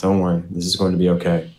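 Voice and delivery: quick, hushed half-whisper under the breath. Retelling a scene where one character holds a crying one and comforts him: half-whispering. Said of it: "he whispers to him".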